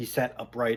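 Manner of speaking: ordinary delivery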